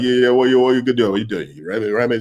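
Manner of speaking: put-on Jamaican accent. Speaker quotes a man who came up to the group, Jamaican accent. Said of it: "he's got the Jamaican accent and he's like".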